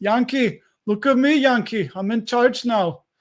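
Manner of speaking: very bad put-on pirate accent. Speaker quotes the pirates from a movie they remember, terrible movie-pirate accent. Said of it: "That was the worst accent ever".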